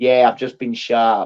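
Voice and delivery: silly, exaggerated fake American accent. Quoting a man filmed on camera, in the most stupid american accent. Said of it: "in the most stupid American accent you could think of".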